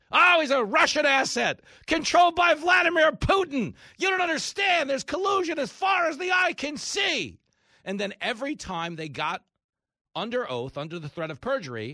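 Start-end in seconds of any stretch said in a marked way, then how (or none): 0.2-7.4 very high, shrill, hysterical shrieking. Speaker mocking opponents' claims as a screaming fit: mock hysterical screaming. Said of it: "a three-year screaming fit?".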